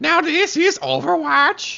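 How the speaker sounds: fake Swedish accent, very slow. Repeating a catchphrase for the co-caster: put-on Swedish accent. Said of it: "Let me do it in Swedish accent".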